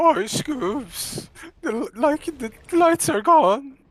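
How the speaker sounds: very high, cracking, fake frightened squeak. Joking about the lights going off, faking a scared voice crack. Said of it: "it's really hard to fake a, a voice crack".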